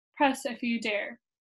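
ordinary delivery

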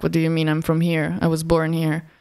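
normal talking voice

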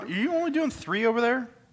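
shouting. Asking another speaker why they are only doing three: yelling. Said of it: "Are you yelling at me?".

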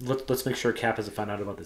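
plain

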